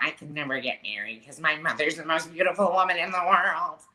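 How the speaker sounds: put-on small-town voice. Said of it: "they kind of sound like this".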